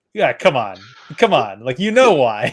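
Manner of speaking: loud, disbelieving, dismissive, incredulous tone. Retelling how he answered a question: imitating an incredulous reply. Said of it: "It's like".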